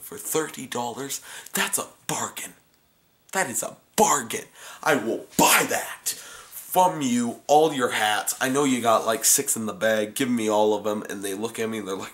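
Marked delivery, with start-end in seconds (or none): 0.0-11.0 sarcastic, put-on eager enthusiasm. Retelling answering sellers offering her snapbacks: retelling a sarcastic reply. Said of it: "I like to be sarcastic".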